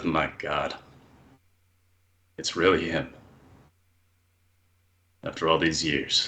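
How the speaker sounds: low mutter under the breath, to oneself. With Good Devil waiting for a mistake, muttered under breath. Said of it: "Just mutter under my breath".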